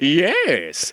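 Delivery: put-on cartoon character voice, drawn out. Laughing, then saying yes in his voice: cartoon character voice. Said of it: "I have to laugh and then say yes in his voice".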